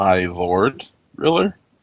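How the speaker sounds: low, doubtful, mocking sarcastic tone. A character in the command tent questions another's title, sarcastic and questioning. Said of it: "kind of sarcastically and questioningly".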